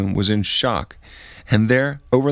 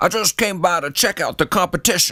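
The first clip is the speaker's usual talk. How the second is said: dead-serious put-on Texan accent, pitched up; 6 semitones higher than usual. Recounting a prank, announcing to everyone in the room: serious Texas accent. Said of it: "in my most serious Texas accent".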